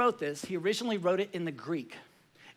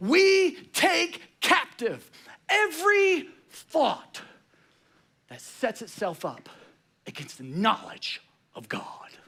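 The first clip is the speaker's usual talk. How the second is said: intense, pitched-up, full-intensity delivery; 6 semitones higher, 4 dB louder than usual. Imagining how Paul would say this if he could take Jocko's voice, in an intense Jocko voice. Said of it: "if Paul could take Jocko's voice".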